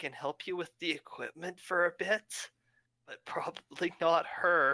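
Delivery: sly, half-whispered stage aside. Playing a character who leans past another to half-whisper: half-whispering in character. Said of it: "I just wanna whisper to him".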